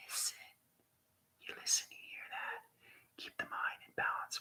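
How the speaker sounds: hushed whisper, very quiet. Guiding listeners through a daily listening exercise, whispering. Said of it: "Why am I whispering?".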